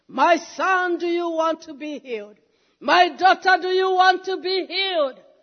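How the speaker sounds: mock beckoning, summoning call. Preaching, voicing Jesus calling out to listeners: Jesus calling in a loud voice. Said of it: "asking in a loud voice".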